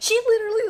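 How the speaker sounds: loud, high-pitched angry outburst.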